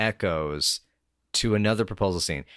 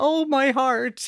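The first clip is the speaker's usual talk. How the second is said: very high cry, laughing through the words. Retelling her teary mom's reaction, imitating mom laughing. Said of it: "She's simultaneously laughing and clutching her chest".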